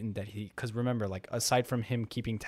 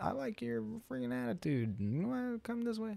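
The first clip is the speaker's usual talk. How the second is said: put-on old man voice, higher and quieter; 12 semitones higher, 5 dB quieter than usual. Acting out someone in power offering a chance: old dude voice. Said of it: "I sound like some freaking old dude".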